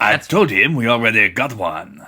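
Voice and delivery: exaggerated put-on French accent. Quoting the French guys from a film just suggested: French guard from Holy Grail voice. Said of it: "those French guys from, uh, Holy Grail".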